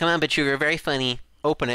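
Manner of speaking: usual speaking voice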